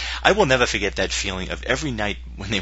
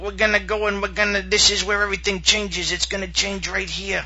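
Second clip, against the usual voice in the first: rural hillbilly-style voice. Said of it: "in that voice".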